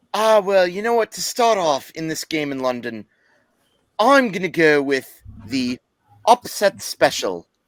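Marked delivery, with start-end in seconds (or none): 1.1-7.4 slow, bad, fake put-on British accent. Picking an upset special for the london game: bad put-on british accent. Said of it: "that was one of my worst British accents".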